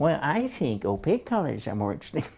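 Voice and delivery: snide, snarky, swooping sarcastic put-on tone. Voicing an opinion not fit for physics class, mock-snarky sarcastic voice. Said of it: "I go into that snarky, sarcastic voice".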